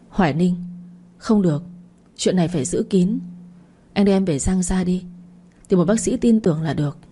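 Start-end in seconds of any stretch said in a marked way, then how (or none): none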